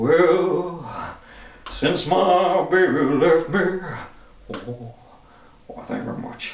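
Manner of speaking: very slow high drawl. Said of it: "Elvis is definitely the most impersonated person on the planet".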